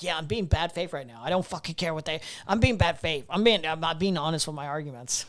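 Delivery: put-on mocking voice. Imitating the opponent, who would admit to arguing in bad faith: imitating the opponent admitting bad faith. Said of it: "and she'd be like".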